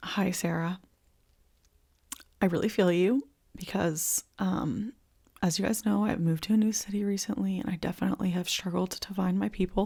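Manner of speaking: tearful voice, crying while talking. Replying to a viewer's message on video, crying while talking. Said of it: "I'm straight up crying".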